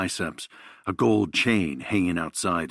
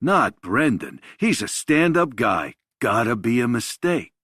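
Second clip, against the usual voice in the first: mocking tone, raised and high in pitch; 5 semitones higher, 5 dB louder than usual. Reading a story, a character repeats what others said: mocking tone. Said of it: "He says this in a mocking tone".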